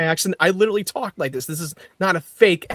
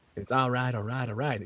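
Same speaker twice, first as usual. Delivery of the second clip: put-on low-pitched Southern accent; 5 semitones lower, 12 dB quieter than usual. Joking that a smart actor has a Southern accent: Matthew McConaughey impression. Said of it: "'cause he's McConaughey".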